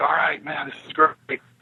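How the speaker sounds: ordinary delivery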